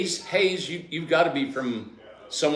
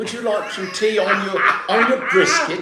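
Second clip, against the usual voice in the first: fake English accent, higher; 7 semitones higher, 4 dB louder than usual. Showing how to talk like someone from england: put-on english accent. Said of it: "Talk like you're from England".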